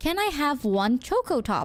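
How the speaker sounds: ordinary delivery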